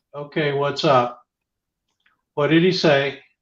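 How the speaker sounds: ordinary talk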